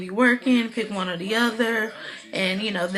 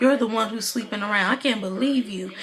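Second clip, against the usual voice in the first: ordinary talk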